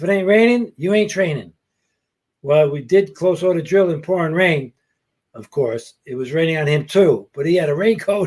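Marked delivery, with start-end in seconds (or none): 0.0-1.5 put-on strong Brooklyn accent, pitched higher. Quote what the sergeant loved to tell his trainees, in Sergeant First Class Fletcher's strong Brooklyn accent. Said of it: "his strong Brooklyn accent".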